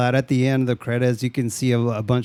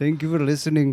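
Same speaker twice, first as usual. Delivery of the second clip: put-on Indian accent, higher pitch; 3 semitones higher than usual. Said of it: "Now we're going Indian".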